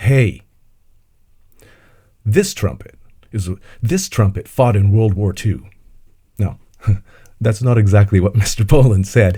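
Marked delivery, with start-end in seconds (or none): 0.0-5.7 mild mock proclamation, declared. Retelling something he once said out loud, in a very loud voice. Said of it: "in a very loud voice".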